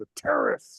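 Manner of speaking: the word "terrorist" squashed into a single syllable. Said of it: "You just say it like it's, like, a one-syllable word".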